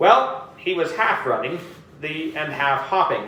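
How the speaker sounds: plain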